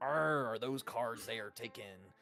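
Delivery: put-on pirate character voice. Retelling a game where Samuel addresses one of the common folk, pirate voice. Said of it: "he has a pirate voice".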